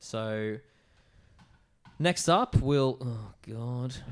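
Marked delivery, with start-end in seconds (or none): 3.0-3.9 soft groan with zero enthusiasm. About to announce the next beer matchup, unexcited. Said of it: "Don't sound too excited".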